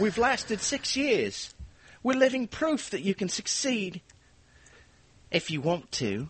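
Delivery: high, dramatic showbiz delivery with dramatic pauses. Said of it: "So this is my [name] impression".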